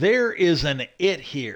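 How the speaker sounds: slow, dead serious delivery. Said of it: "he looked at him dead serious".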